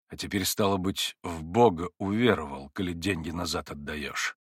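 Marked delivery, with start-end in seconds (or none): none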